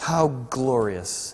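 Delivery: mock dripping sarcasm. Acting out a wife's scornful words from scripture: dripping with sarcasm. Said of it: "dripping with sarcasm".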